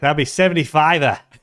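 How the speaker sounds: put-on Australian accent. Retelling what the man said when the speaker paid by credit card, in a put-on Australian accent. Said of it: "That's the most Aussie thing I've heard".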